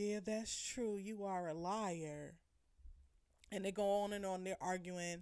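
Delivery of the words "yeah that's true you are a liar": slow mutter under the breath, word liar drawn out. Retelling an aside during an argument: imitating muttering under her breath. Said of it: "under her breath like".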